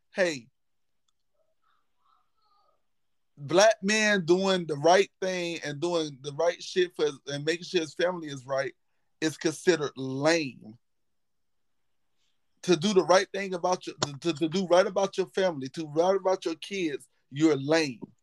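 normal talking voice

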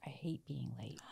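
near tears, teary voice. Retelling what the son said when asked about being late: imitating someone teary. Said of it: "he was sort of teary".

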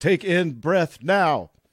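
put-on robotic, computer-like AI voice. Retelling the breathing commands given during the scan: imitating an ai voice. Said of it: "A I voice comes on over the music".

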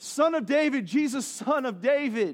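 woman's put-on high, loud, slow, drawn-out yell. Retelling a story, acting out a woman calling to jesus: imitating a woman yelling out. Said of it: "she's yelling out".

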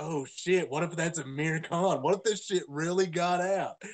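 normal talking voice

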